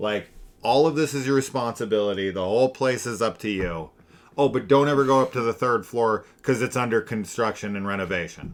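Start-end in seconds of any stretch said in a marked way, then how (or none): none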